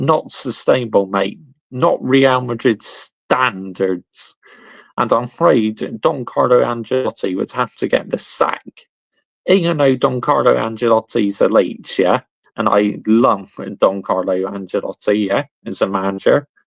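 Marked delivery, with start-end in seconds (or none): none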